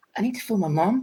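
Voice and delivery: barely-there, soft, high, hushed half-whisper. Retelling a tearful woman beside them, imitating her quietly half-whispering to them. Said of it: "really quietly, just whispers to me".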